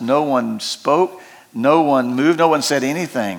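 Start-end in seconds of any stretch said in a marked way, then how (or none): none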